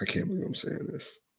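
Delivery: soft, whispered, pained, reluctant muttered aside.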